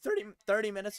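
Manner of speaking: voice cracking on "thirty". Answering chat about how long the camera stays on, voice cracking. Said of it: "voice crack".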